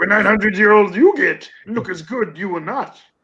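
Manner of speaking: high-pitched puppet voice. Quoting a line in a Yoda voice during a quiz. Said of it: "Why does your Yoda sound like Grover?".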